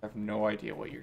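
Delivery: fast, hushed half-whisper, rattled off. Game master voicing a man who pulls the player close while shaking hands, half-whispering. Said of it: "he pulls you closer and whispers".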